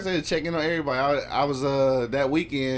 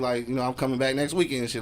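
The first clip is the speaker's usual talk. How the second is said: normal talking voice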